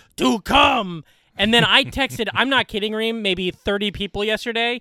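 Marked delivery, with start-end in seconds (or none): 0.2-1.1 loud shouted yell. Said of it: "has him yelling".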